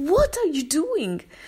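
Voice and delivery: high, slow, shocked scream. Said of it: "I scream at her".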